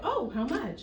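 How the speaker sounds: ordinary delivery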